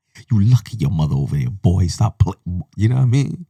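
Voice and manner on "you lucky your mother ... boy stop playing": intense, shouted whisper-scream. Speaker acts out scolding a boy from across the street, imitating a whisper-scream. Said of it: "whispering, but I'm screaming at the same time".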